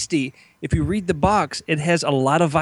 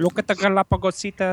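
put-on French accent; 2 semitones higher than usual. Answering another speaker's teasing about the movie: Jacques Cousteau impression. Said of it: "That was my Jacques Cousteau".

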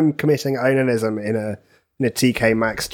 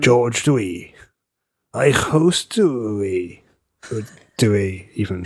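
gravelly, put-on voice with Welsh accent; 3 semitones lower than usual. Saying a name while talking Welsh, in a put-on Welsh voice. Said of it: "What's this voice you're putting on?".

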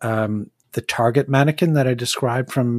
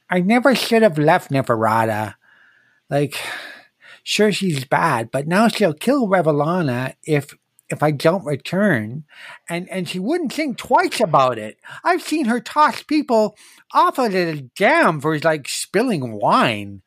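put-on lateral lisp, higher pitched; 6 semitones higher than usual. Playing the beast Kyle in a tabletop game, speak with Kyle's lateral lisp. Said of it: "So, I do have a bit of a speech impediment, sure. It's called a lateral lisp. / he looks like a living ballista. On his back is a very large looking, almost sort of harpoon launcher. / And he takes a".

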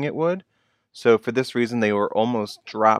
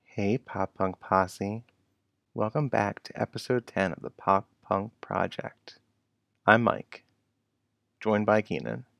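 sexy, seductive, sultry voice, much quieter; 6 dB quieter than usual. Podcast host opening the episode and introducing the co-host, in a sexy voice. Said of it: "I didn't realize you were going to do it that sexy".

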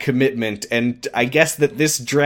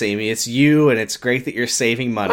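ordinary talk

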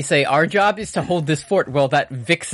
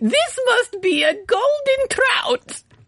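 cartoon character voice with pitch pushed way up. Comparing Blathers voices with another performer, giving a line read in Blathers voice. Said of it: "i'll give the line read".

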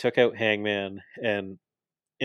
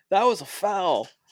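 mock very high, shrill yell; 10 semitones higher, 3 dB louder than usual. Retelling a wrestling bit where a wrestler protests a call, imitating someone yelling. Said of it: "Nick yells".

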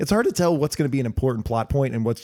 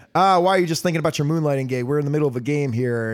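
ordinary talk

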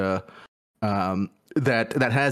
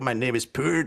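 put-on French accent. Imagining how a named executive says his own name: imitating a French accent. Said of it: "I imagine him saying it in, in the French way".

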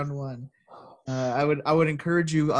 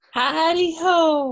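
higher, louder put-on squeaky cartoon voice; 14 semitones higher, 6 dB louder than usual. Answering a request for a Lois impression: Mister Hankey impression. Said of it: "that was Mister Hanky from South Park".

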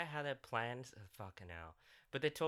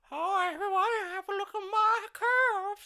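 high, slow, mocking put-on voice. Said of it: "Uhura's like".

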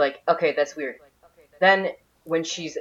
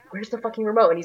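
mock panic, higher pitch, faster pace; 5 semitones higher than usual. Retelling a reaction to a plot twist, acting out Paul freaking out. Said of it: "he starts freaking out and being like".

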